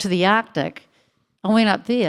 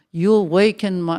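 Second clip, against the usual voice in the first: put-on Russian accent. Speaker quoting german fans who approached them, in an accidental russian accent. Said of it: "I've got a Russian accent there".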